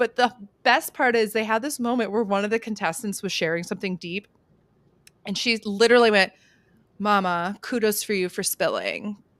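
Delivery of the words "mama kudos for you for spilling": put-on flat, unemotional voice. Retelling her reply to a contestant who was sharing something deep, imitating someone unemotional. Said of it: "Just so like like unemotional".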